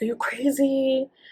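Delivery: mock, high-pitched, frightened yell. Retelling mom's reaction on a phone call: imitating mom yelling. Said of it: "I just remember her yelling at me".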